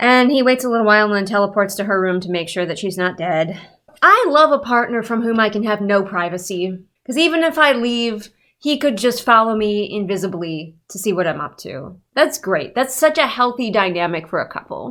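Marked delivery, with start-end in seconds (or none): 4.0-14.9 thick, dripping, pointedly insincere sarcastic delivery. Commenting on a couple in a book she is reviewing: sarcastic tone. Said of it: "Sarcasm? You think?".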